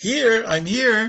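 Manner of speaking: cheery, jovial reply. Retelling how the rabbi usually answers the attendance: retelling a happy, jovial answer. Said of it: "his usual happy, jovial".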